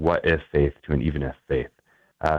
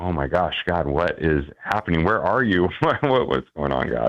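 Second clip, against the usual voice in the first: put-on fearful, panicked voice. Retelling own past reaction to losing vision, imitating own past fear. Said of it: "there was this fear of".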